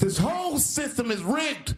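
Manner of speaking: very high, full-lunged, top-of-the-lungs scream. Act out a billionaire at the first debate, imitating someone screaming at the top of his lungs. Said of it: "screaming at the top of his lungs".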